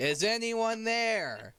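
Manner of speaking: calling out loudly. In a tabletop game, a player's character shouting using thaumaturgy. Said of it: "I shout using thaumaturgy".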